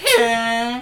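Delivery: southern twang, stretched drawl, drawn-out "hey". Retelling a stranger met in a game lobby: imitating a deep-voiced redneck. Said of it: "the deepest, like".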